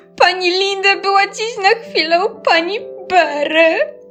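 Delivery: halting, stammering words. Narrator reads Ania, in tears, answering Maryla's demand, stammered. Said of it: "Wyjąkała".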